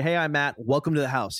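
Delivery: ordinary talk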